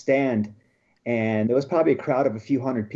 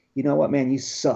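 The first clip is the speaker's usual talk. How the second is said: imitated whisper. Retelling what a beaten opponent said: imitating a whisper. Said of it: "He whispers to me".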